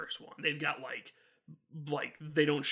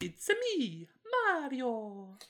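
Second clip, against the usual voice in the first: very high cartoon voice with swinging, swooping pitch; 9 semitones higher than usual. Describing the dad in a Christmas special, doing a Mario voice. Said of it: "that voice".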